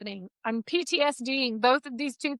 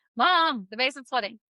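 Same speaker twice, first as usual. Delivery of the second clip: ordinary talk, nothing marked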